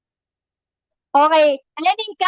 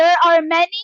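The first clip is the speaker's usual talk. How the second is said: ordinary delivery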